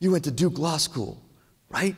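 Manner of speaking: put-on whisper. Retelling how a guy whispered in a bathroom during an interview: imitating someone whispering. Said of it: "he starts to whisper".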